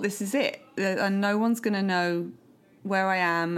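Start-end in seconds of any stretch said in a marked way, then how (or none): none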